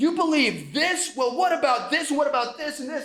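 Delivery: mock high, abrasive, confrontational yelling. Retelling confronting a classmate about her beliefs: retelling an abrasive yell. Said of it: "abrasively, like, yelling at her".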